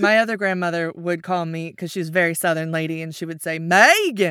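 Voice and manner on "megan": first syllable of the word leaned on hard. Recalling how her southern grandmother called her: heavy stress on first syllable of megan. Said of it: "So all of the emphasis was on that very first syllable".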